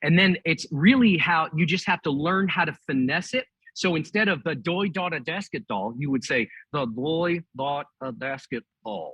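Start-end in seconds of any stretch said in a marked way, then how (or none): 6.7-9.1 lips-still ventriloquist speech, no lip movement. Showing a quick ventriloquist lesson: talking without moving lips. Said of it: "tip of your tongue against the back of your top front teeth".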